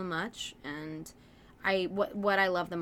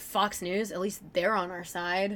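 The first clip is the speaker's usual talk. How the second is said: ordinary talk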